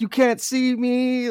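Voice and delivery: put-on obnoxious gloating, very high and drawn out. Retelling beating a friend at a game booth: imitating own obnoxious taunt. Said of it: "super, like, obnoxious".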